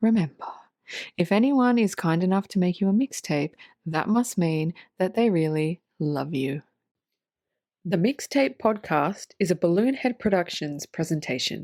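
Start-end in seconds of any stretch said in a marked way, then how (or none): 0.0-6.6 calm, soothing, gentle meditation-guide voice. Podcast host signing off the episode to listeners, in a soft meditation voice. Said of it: "this is my meditation soft voice".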